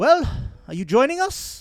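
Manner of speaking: calling out loudly. Voicing a woman calling out from above after shattering glass: calling out. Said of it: "a female's voice ca-, ca-, call out".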